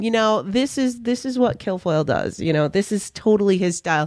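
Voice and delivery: ordinary talk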